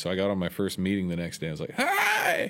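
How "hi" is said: very high, squeezed-out, lost-voice squeak. Retelling greeting a meeting after losing the voice: Bobcat Goldthwait voice. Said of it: "I sound like Bobcat Goldthwait".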